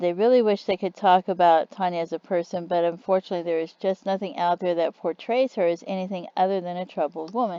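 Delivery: ordinary delivery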